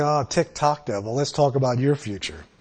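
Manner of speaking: ordinary talk, nothing marked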